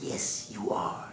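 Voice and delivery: hushed, breathy, whispered little rat voice. Storyteller voicing the rat answering the cockroach, rat character voice. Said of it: "And the rat said".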